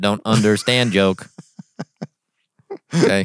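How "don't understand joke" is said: robotic voice. Joking after apologizing for a rude joke, in a robot voice. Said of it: "I'm a robot".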